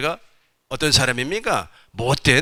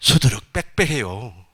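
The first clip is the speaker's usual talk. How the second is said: put-on Korean Gyeongsang regional dialect accent. Speaker trying out a phrase in gyeongsang dialect. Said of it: "경상도 사투리를 한번 해볼까요?".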